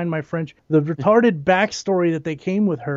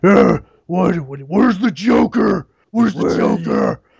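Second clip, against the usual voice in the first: put-on extremely gruff voice, louder; 2 semitones higher, 5 dB louder than usual. Mocking how the hero sounds in costume: imitating Bale's gruff Batman voice. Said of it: "when you're Batman, be extremely gruff".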